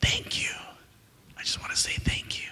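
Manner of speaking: hushed, barely audible, breathy whisper. Retelling a girl at a book signing saying thank you: imitating a whisper. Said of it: "she whispers to me".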